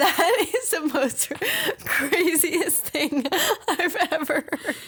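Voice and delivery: talking through laughter. Reacting to a shocking story about a dog, laughing while talking. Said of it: "I'm sorry that I'm laughing".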